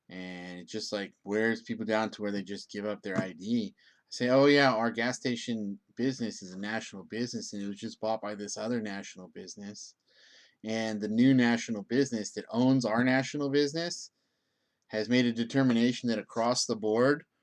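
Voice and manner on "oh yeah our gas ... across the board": ordinary delivery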